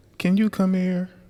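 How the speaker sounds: very high-pitched woman's voice. Retelling how his wife called him upstairs: imitating wife's voice. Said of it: "I'm always doing your voice on this".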